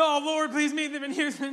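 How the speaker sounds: acted tearful crying voice. Retelling praying for Houston while picking up trash, retelling crying while praying. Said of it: "And I'm like crying".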